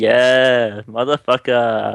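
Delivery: smug, self-satisfied, drawn-out gloat. Describing winning a board game, the speaker voices what plays in their head: smug voice. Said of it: "this sort of like smug voice in my head".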